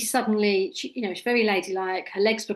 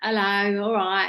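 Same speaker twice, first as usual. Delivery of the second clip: soft, casual, common-sounding everyday speech. Retelling how a woman greeted her before hypnosis, imitating common casual speech. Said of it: "talk, common as muck like me".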